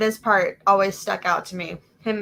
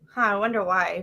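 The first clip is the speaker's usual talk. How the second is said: ordinary talk, nothing marked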